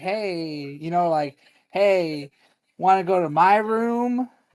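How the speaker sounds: slow, lingering, flirtatious delivery. Retelling how a woman flirted with Aaron, imitating her mock-flirty voice. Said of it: "she just started getting like real flirty".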